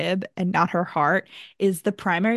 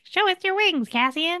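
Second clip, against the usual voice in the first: put-on very high, squeaky, cutesy child voice; 11 semitones higher than usual. Retelling a book scene where children ask to see wings: imitating children's voice. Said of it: "Please never do that voice again".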